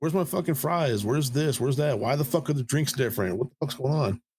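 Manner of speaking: furious, pissed-off, angry ranting outburst. Retelling checking a wrong food order: imitating own angry outburst. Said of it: "I was so pissed off".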